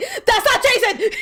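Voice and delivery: mock mad outburst, very high pitched. Retelling first hearing a new voice actor: imitating own angry past self. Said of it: "I got mad again".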